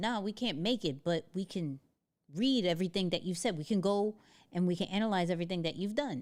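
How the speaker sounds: plain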